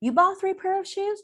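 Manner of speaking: surprised, rising tune on shoes. Repeating a statement back to express surprise: voice rising on final 'shoes'. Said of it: "I'm rising the intonation and I'm showing surprise".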